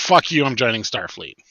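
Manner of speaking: ordinary talk, nothing marked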